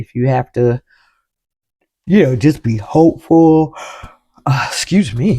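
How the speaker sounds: speaking mid-yawn, yawning. Speaker talking to a listener, yawning mid-sentence. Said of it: "sorry I'm yawning like this".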